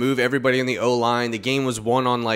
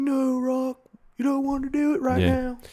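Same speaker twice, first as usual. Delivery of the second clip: very high-pitched voice, pitched way up, drawn out; 13 semitones higher than usual. Retelling being stopped from a fight, bad impression of his dad. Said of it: "you're so bad with impressions".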